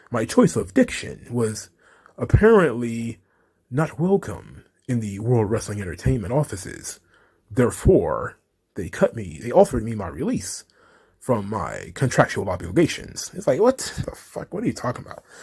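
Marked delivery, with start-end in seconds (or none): 0.1-13.3 low, deep, swooping, pompous, bloviating oration. Act out a man telling of his release by World Wrestling Entertainment, in a Michael Eric Dyson bloviating voice. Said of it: "Michael Eric Dyson bloviating voice".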